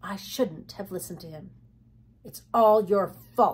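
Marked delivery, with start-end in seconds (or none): 2.2-3.5 bitter and louder. Narrator reading Dill's reply after Jody blames him, bitterly. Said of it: "said Dill bitterly".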